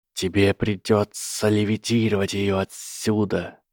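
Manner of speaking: hissed, hissing words. Narrator reads a character speaking to a snake: hissing. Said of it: "прошипел Гарри змее".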